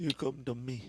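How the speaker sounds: put-on swollen-jaw voice. Friends discussing favorite Godfather parts; speaker does a swollen-jaw Godfather impression. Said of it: "He has like the swollen jaw, so he's all like".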